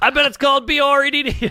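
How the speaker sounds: play-acted, excited, giddy, high kid-like glee, like ten-year-old. Retelling a comic's TV line, imitating Norm excited like a ten-year-old. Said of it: "he's so excited. He's like a, like a ten-year-old".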